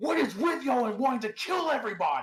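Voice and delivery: very high, screamed out voice. Narrating a character who shoves a goat aside as the earth quakes, screaming out. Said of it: "She goes and screams out".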